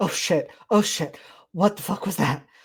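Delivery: loud outburst with breathless gasps between words. Narrating a game, voicing a character who has just reappeared: panting and gasping. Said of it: "panting and gasping and being like".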